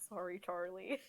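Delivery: mumbled, put-on character voice. A player speaking as their character Cyrus in a tabletop game, muttering as Cyrus. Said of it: "Cyrus kind of mutters like".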